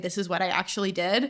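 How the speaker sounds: ordinary delivery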